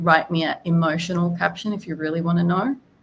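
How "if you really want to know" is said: ordinary talk, nothing marked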